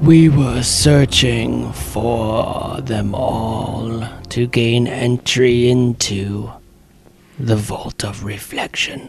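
hollow, echoing rasp, otherworldly undead voice. A dead body's jawbone creaks open to answer the players' last question, hollow, raspy corpse voice. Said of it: "The jawbone creaks open and a hollow, ... The jawbone creaks open and a hollow, raspy voice echoes out from another world".

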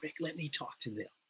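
very hushed, very quiet whisper. Recounting what the former pastor said to him, retelling a whisper. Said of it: "he whispered to me".

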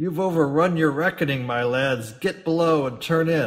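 loud bellowing roar, mixing angry tone and laughter. Narrator reads a man ordering the lads below: roaring, half-laughing, half-angry. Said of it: "roaring with a kind of half-laughter, half-anger".

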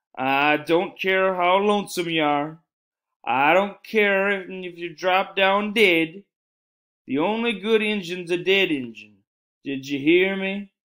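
high, drawn-out hollering as if over a long distance. Calling across a wide gap to another figure, he shouts through cupped hands. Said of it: "he shouted through cupped hands".

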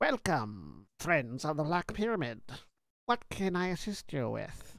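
bug-like insectoid creature voice with swooping pitch. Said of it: "in this very high-pitched sort of insectoid voice".

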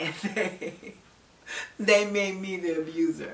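rueful, disbelieving laugh through the words.

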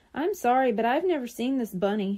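ordinary delivery

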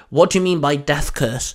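ordinary talk

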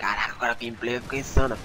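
normal talking voice

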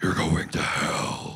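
loud, slow, drawn-out, booming cartoon villain voice. Retelling a voice heard while falling in darkness: Doctor Claw voice. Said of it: "kinda like Doctor Claw from Inspector Gadget".

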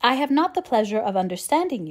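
ordinary delivery

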